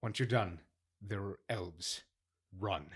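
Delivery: hushed urgent voice. Speaking in character to an ally amid loud music: hushed voice. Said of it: "in a very hushed way".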